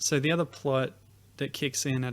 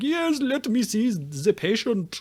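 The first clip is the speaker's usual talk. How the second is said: put-on very high, loud, slow caricature German accent; 9 semitones higher, 7 dB louder than usual. Recapping a show where Mario poses as a circus vet, Mario's comedic German accent. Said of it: "this incredible like comedic German caricature accent".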